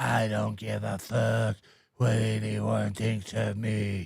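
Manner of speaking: put-on tough guy voice. Trying out a new comedy voice called Don't Give a Crap Man. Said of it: "This is a new voice I'm trying".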